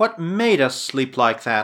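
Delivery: ordinary delivery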